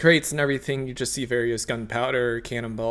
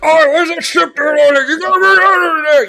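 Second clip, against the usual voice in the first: shrill, high, very loud, garbled yelling; 13 dB louder than usual. Voicing a pirate-like shipmaster yelling across the dockyard: shipmaster shouting. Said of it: "you hear him shouting".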